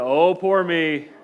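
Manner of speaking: put-on self-pity. Leading the audience in practicing a phrase together: mock self-pity. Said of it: "Really feel it".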